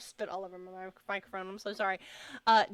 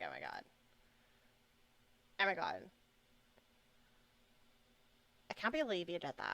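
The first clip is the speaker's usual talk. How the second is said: terrible put-on Valley Girl accent, swooping; 6 dB quieter than usual. Acting out a gasp face while planning expressions, in a terrible Valley Girl impression. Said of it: "Terrible Valley Girl impression".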